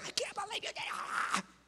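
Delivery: quiet, hushed yell in a whisper. A dad retelling how he scolded his son, retelling a quiet yell. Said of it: "like the quiet yell".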